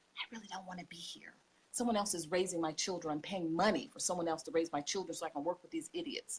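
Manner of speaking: soft, hushed whisper under the breath. Retelling what women in training said: whispering, imitating women. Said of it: "And they would whisper".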